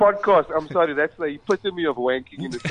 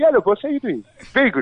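put-on easygoing Congolese accent, pitched up; 7 semitones higher than usual. Describing Bruno to the audience at a show, imitating Bruno's Congolese accent. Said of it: "Bruno speaks like this".

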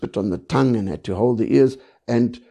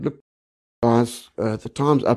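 normal talking voice

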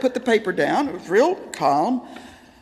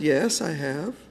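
hushed, very quiet, soft and short; 7 semitones lower, 6 dB quieter than usual. Retelling how Daddy answered a question: imitating a quiet reply. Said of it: "Very quietly, he said".

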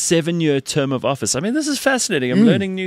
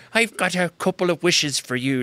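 put-on leprechaun voice. Describing how these people talk, the speaker imitates them in a leprechaun-like voice. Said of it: "Like almost like a leprechaun".

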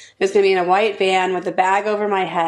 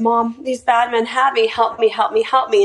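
mock tearful crying, speaking through sobs; 4 semitones higher than usual. Retelling a daughter's plea for help on the phone: retelling a sobbing plea. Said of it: "she starts crying and sobbing and pleading".

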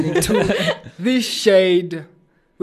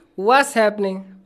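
informal, casual, high-pitched voice; 5 semitones higher than usual. Trying out the show's opening greeting for a co-host, in a high-pitched voice. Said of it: "why did you make your voice high pitch?".

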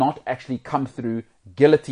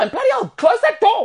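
put-on scream, higher and louder; 6 dB louder than usual. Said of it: "And it's screaming".

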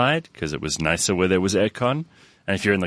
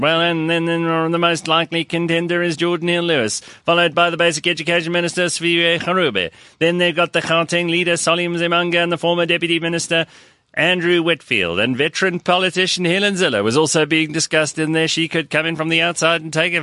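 pitched-up horse race commentator calling fast; 7 semitones higher than usual. Listing the names in the running, calling it like a horse race announcer. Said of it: "I'll try and do this like a race announcer at the horse races".

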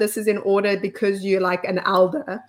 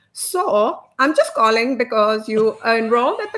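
imitated Indian accent. Retelling a phone call, quoting the caller in an Indian accent. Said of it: "do the accent".

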